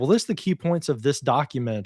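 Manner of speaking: plain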